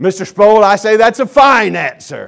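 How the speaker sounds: very loud, gruff, barked voice. Recounting Dr. Gerstner's reply to Mr. Sproul's answer, in Dr. Gerstner's gruff voice. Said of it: "in his gruff voice".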